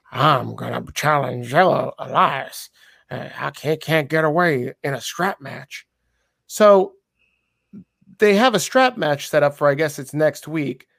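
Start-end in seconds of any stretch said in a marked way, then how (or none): 0.2-5.9 wild vagrant-style voice. Acting out Riker talking to Mansoor at the end of the show, Riker sounding like a crazy hobo. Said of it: "like a crazy hobo now".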